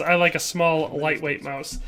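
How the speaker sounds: normal talking voice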